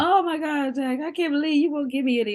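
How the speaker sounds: put-on, high-pitched fake crying voice. Retelling how Grandma fake-cried whenever he wouldn't share: imitating Grandma's fake crying. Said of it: "she would always do this fake cry".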